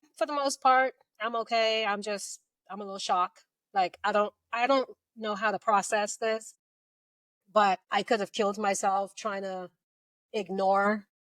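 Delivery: ordinary talk, nothing marked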